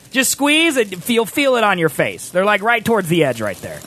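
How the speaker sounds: chipmunk-like helium voice with wide pitch range.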